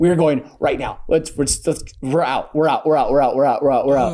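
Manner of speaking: ordinary talk, nothing marked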